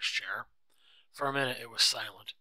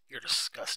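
usual speaking voice

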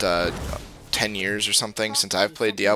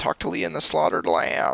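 really poor, high, raspy put-on character voice; 8 semitones higher than usual. Going to the first quest in the game, give its instruction in a really bad Deckard Cain impression. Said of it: "That was my Deckard Cain impression".

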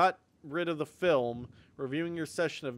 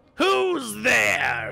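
put-on creaky, raspy old man voice, raised and calling out; 8 semitones higher, 10 dB louder than usual. Repeating a game character's line, imitating the old man's voice. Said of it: "I would do that exact voice".

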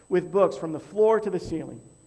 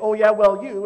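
loud, high-pitched, defensive tone. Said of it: "they're gonna get defensive and say".

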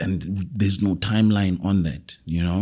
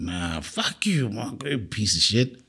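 wild, boozy, belligerent aggression, acted out; 4 dB quieter than usual. Retelling getting drunk and belligerent days after apologizing; mock drunk belligerence. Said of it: "fucking drunk again, getting wild and belligerent".

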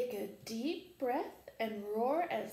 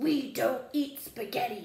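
loud, growling big lion voice; 6 dB louder than usual. A narrator reading a story voices the lion's reply, growling lion voice. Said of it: "The lion growled".

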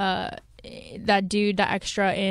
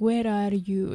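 put-on Venezuelan accent impression. Imitating the man counting you down, with his Venezuelan accent. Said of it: "just with his like Venezuelan accent".

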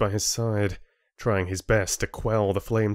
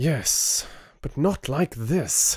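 anger held in check, slow and high; 6 semitones higher than usual. Replying to the chieftain before the members, holding back anger. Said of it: "Rin struggled to keep the anger out of his voice".

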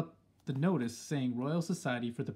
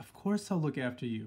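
murmuring. The narrator's grandmother speaks to the narrator, murmuring. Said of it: "my grandmother murmured".

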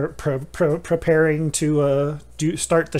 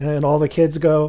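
ordinary talk

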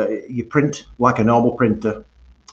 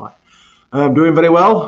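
out of breath, winded, pitched up and raised; 6 semitones higher, 7 dB louder than usual. Answering how they're doing, the speaker is out of breath. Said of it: "I'm just out of breath at the minute".

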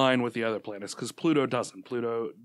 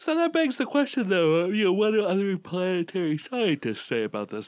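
yawning through words, stretched, pitched up; 8 semitones higher, 3 dB louder than usual. Mid-conversation with a co-host, the speaker keeps talking through a yawn. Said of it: "Sorry for talking through a yawn".

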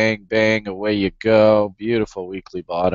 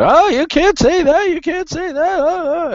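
very high, jabbering, yammering voice; 3 dB louder than usual. Imitating a viewer objecting to the videos: imitating someone yammering. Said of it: "somebody will come yammering out".

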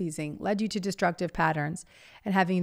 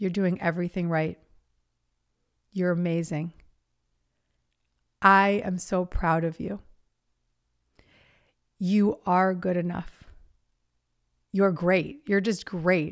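emotional voice, moved to tears. Speaking directly to a young person who got sober; emotional, near tears. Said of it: "You make me cry".

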